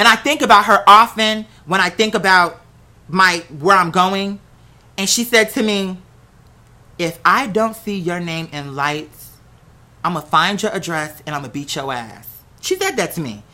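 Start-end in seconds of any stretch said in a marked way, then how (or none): 7.0-12.3 low, dead-serious voice with total conviction. Retelling a teacher's warning after a performance: imitating someone speaking with conviction. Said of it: "she said it with so much conviction".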